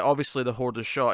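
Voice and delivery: ordinary talk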